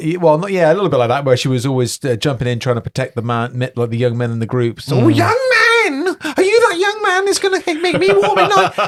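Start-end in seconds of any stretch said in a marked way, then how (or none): 5.0-8.9 very high, comic put-on dwarf-woman character voice. Retelling a game character hunting for a man: put-on female dwarf voice. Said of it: "that was a woman".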